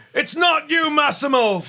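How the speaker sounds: very high, loud cry full of emotion. Voicing a dwarf monk who may know massimo: emotional delivery. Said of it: "a lot of emotion in his delivery".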